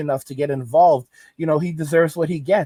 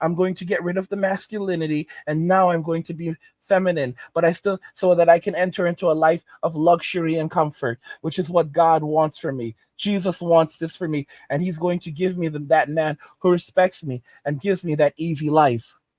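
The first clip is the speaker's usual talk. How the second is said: usual speaking voice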